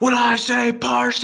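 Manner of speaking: high-pitched, loud, heckling, mocking shout.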